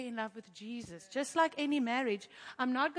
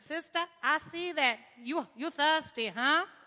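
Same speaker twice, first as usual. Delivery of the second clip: put-on American accent, raised and loud; 3 semitones higher, 5 dB louder than usual. Retelling Jesus speaking to the thirsty woman at the well: Jesus with an American accent. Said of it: "he had an American accent".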